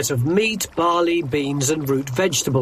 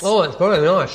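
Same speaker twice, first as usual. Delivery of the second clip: speaking while chewing, mouth full. Tasting a pork and apricot stew at the table, talking with mouth full. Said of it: "Excuse me talking about my mouthful".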